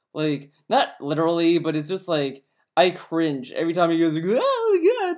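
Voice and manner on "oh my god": very high, ear-hurting, squeaky outburst. Mocking a guy who acts like a clown, Phil's high-pitched voice. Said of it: "goes in such high pitched voices".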